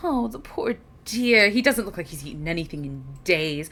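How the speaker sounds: anxious, fretful, worried, concerned voice. Voicing a character who looks at a thin traveler: worried character voice. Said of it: "a worried expression as she goes".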